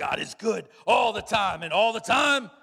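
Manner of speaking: very loud, booming preacher voice. Imitating the pastor during a sermon; preacher voice. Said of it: "he has like this preacher voice".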